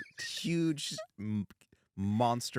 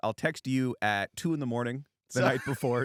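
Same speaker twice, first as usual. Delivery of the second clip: ordinary delivery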